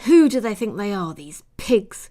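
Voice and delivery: hissed through clenched, gritted teeth. Tending someone's wounds with a cool compress, she hisses through clenched teeth. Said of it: "she hissed through clenched teeth".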